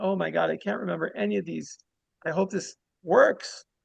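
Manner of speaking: tearful, distraught, upset crying voice. Retelling a story of a man who forgot the meditations: imitating someone crying. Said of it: "he's just, like, crying, like".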